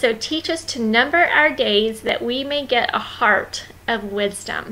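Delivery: ordinary delivery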